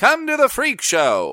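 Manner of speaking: put-on very high, swooping old-timey carnival barker shout. Showing how old boardwalk barkers shouted to crowds: old-timey boardwalk barker shout. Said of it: "people shouting at, like, boardwalks".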